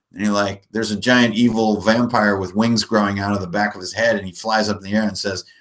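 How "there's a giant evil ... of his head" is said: ordinary talk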